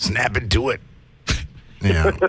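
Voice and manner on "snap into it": low, quiet growling wrestler impression. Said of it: "he's like Randy Savage".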